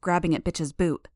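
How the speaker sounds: ordinary delivery, nothing marked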